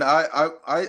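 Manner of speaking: ordinary talk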